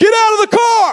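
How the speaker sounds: high, loud taunting shout. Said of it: "he started taunting us".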